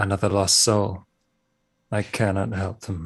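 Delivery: muttering under breath. Voicing a priest as a passer-by walks away: muttering to himself. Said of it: "you just hear him mutter to himself".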